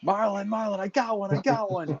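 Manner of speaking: play-acted, high-pitched hollering call-out. Retelling a buddy's reaction out on the boat: imitating a friend hollering. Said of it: "my buddy just started hollering".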